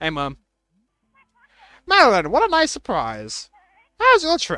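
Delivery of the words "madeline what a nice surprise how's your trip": put-on very high, swooping, sing-song little old lady voice. Voicing the mom as her child arrives in a dream scene, in an old lady voice. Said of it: "Is that a good old lady voice?".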